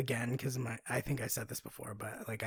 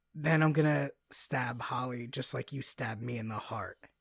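ordinary talk

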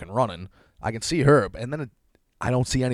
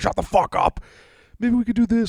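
frantic, very high, out-of-control screaming; 11 semitones higher, 4 dB louder than usual. Retelling a stressed argument with a girlfriend over a sick dog: imitating own screaming. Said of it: "just screaming".

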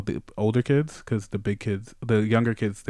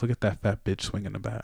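put-on insulting voice, quieter; 6 dB quieter than usual. Retelling what an older guy said about mom: imitating the guy's insult. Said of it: "it was the way you said it".

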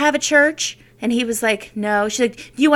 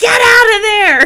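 yell, much higher and much louder; 9 semitones higher, 10 dB louder than usual. Recounting shouting from a car at a woman asking to pray, retelling own yell. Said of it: "the voice of God just yelling".

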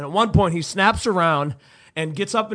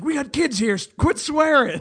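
loud, high-pitched shouting; 8 semitones higher than usual. Retelling how nearby fans told a rowdy fan to calm down: imitating someone yelling. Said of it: "started yelling at this guy".

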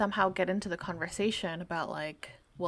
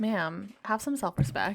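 ordinary talk, nothing marked

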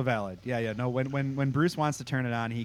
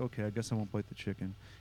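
soft, mopey, acted-out sad and let-down tone; 7 dB quieter than usual. Retelling Sam, told not to eat the chicken, giving in, mock-sad. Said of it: "He's all sad about it".

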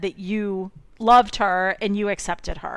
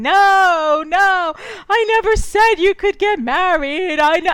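shrill, very high, dramatic yelling outburst; 10 semitones higher, 7 dB louder than usual. Retelling how the mother yelled at her son: imitating the mother yelling. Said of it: "She starts yelling".

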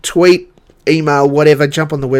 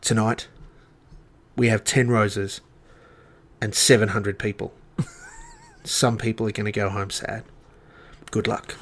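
very quiet, hushed, host-style voice; 4 semitones lower, 10 dB quieter than usual. Imitating the host announcing roses that night: hushed-tone Osher impression. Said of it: "he has a hushed tone voice".

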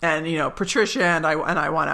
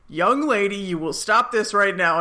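put-on stern dad voice, higher; 3 semitones higher than usual. Retelling a scene, playing Michael trying to act as her stern dad. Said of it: "he actually tries to be, like, her stern dad".

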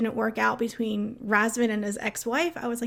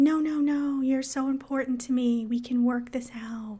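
put-on slow childlike little-girl voice, "no" stretched out. Discussing a woman, the speaker quotes what she says to him, imitating her little-girl voice. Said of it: "In her little girl voice that she uses".

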